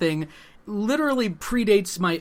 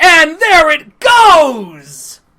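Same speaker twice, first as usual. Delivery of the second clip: very loud, very slow, booming sports announcer call; 9 semitones higher, 13 dB louder than usual. Narrating a drink being downed on request: mock sports commentary. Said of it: "would you narrate, please?".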